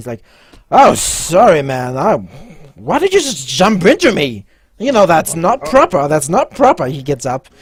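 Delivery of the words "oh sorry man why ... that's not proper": put-on loud, heavily drunken voice. Game master voicing a drunk lieutenant who just collided with a player, drunk. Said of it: "you notice that the lieutenant or whatever he is from the other table, that seems to be quite drunk, / you notice that the lieutenant or whatever he is from the other table, that seems to be quite dru".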